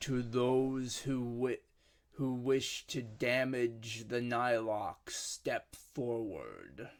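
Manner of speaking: big, grand, ceremonial proclaiming voice. A cloaked figure speaks to all of you in a booming voice. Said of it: "he says to to you all in a booming voice".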